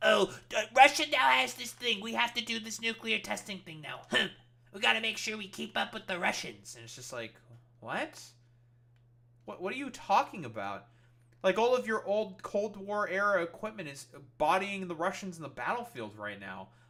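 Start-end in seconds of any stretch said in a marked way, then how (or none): 0.0-6.8 put-on childlike, high-pitched little voice. Mocking how leaders react to Russian claims: imitating Donald Trump as a child. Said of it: "children like Trump to be like".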